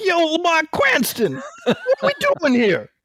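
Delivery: very high, swooping, swinging comic voice. Imagining a movie sidekick line: Tracy Morgan voice. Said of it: "What we needed was Tracy Morgan".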